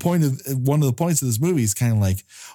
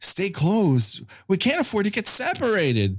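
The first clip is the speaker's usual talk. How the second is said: put-on high, pleading, begging child voice; 8 semitones higher than usual. Retelling a character's line, imitating a kid begging his mom. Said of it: "Like he's begging his mom to go hit up the drive-thru".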